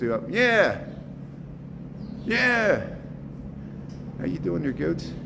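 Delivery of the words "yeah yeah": high, goat-like bleat on yeah. Visiting goats at a zoo, showing how saying yeah sounds like a goat bleating. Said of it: "I sound like a goat".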